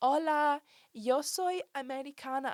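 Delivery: very slow, high, silly put-on American accent. Retelling a Spanish-speaking friend posing as an American student, silly fake American accent. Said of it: "doing it with a silly accent".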